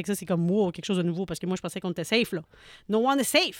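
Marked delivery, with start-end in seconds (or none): 2.9-3.6 yelling, higher and louder. Exclaiming in English while discussing a story with another speaker: shouting. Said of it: "Arrête de crier".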